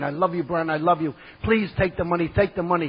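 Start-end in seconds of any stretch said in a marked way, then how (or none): none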